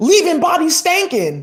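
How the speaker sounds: wild, high, swooping, shrieking scream. Retelling what a high priestess did in space: imitating a priestess screaming. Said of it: "started screaming".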